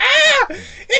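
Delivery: high-pitched Brooklyn cartoon voice. Imitating Toad while describing his voice: Toad impression, high-pitched Brooklyn accent. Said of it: "high-pitched to fit his design".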